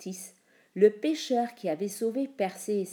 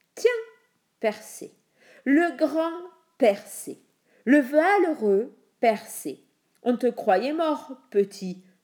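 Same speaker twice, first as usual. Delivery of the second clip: loud, jeering, snickering, sneering mockery; 5 semitones higher, 7 dB louder than usual. The king greets the hero storming into his throne room, sneering.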